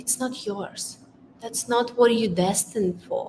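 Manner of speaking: very soft, very quiet, hushed, barely-there murmur. Speaker recalls an inner voice one lockdown morning, in a very quiet voice. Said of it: "this very quiet voice".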